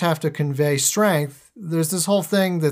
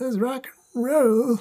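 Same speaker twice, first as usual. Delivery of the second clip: higher pitch with an odd little lilt; 7 semitones higher than usual. Retelling a film character's line in a Reagan mask: Bodhi's weird little lilt. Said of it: "weird little lilt when he says it".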